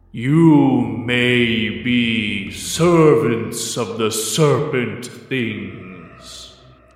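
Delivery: halting, grave, archaic tree creature voice, "may" drawn out. Miragulo, Shepherd of the Azure Stand, addresses the Daughter of the Islands, in a thunderous booming voice. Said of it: "and a thunderous voice booms out. / Each eye is maybe a foot and a half tall in front of you, the mouth parting with gnarled teeth made of crushing wood, / and a thunderous voice booms out. / Shepherd".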